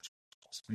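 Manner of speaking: very soft, unvoiced, hushed whisper.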